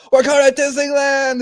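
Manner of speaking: high, excited, hyped-up shout. Retelling a commercial where players shout excitedly: imitating someone yelling.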